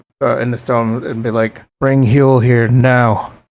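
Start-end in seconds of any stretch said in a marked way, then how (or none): 1.8-3.2 whispering. Whispering a message into a messaging stone: whispering into a stone. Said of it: "I'll whisper in the rock".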